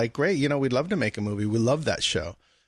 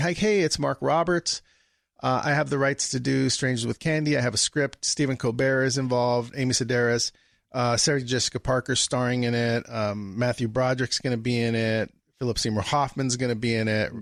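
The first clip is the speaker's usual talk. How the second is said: ordinary talk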